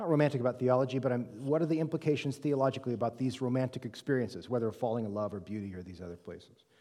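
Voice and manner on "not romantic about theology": fast, offhand, rattled-off delivery. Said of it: "I'll read it slowly".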